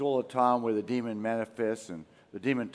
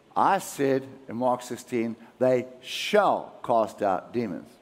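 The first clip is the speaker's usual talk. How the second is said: usual speaking voice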